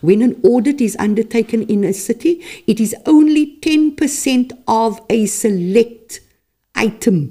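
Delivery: slow, deliberate delivery. Explaining to the public how city audits are done, speaking slowly. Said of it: "I'd like to say this slowly".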